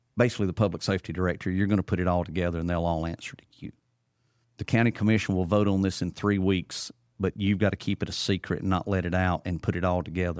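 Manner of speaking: normal talking voice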